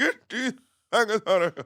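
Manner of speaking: stand-up comic style delivery. Repeating the line for the others to guess: Bernie Mac impression. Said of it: "Do you know who that is?".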